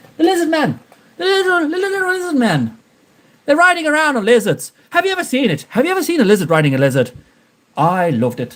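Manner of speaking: put-on Irish accent, very high, sing-song and swooping. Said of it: "Don't know how close to Irish that was".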